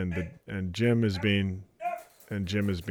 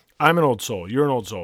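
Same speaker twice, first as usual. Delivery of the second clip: usual speaking voice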